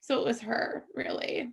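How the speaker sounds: high, whispery, tearful voice. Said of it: "I feel like I'm gonna cry".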